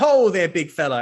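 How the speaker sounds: jolly bloke character voice. Voicing a bloke who approaches the players in the street: cheerful bloke voice. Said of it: "He's like".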